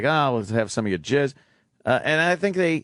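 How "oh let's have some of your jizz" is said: usual speaking voice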